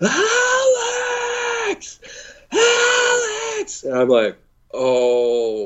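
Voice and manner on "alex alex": mock very high, drawn-out, panicked, terrified scream. Acting out how he screamed your name; retelling a terrified scream. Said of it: "he's screaming my name".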